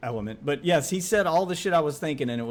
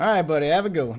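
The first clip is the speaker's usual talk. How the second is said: dismissive, passive-aggressive, louder and higher; 4 semitones higher, 5 dB louder than usual. Showing a sign-off often used with people online, passive-aggressive. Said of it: "the passive aggressive thing".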